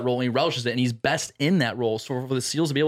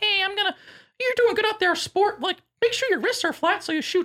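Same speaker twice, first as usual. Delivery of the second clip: very high, kindly, good-natured grandpa voice. Imitating a teammate who talks like a grandpa giving advice: imitating Pete as a grandpa. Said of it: "he's like your grandpa".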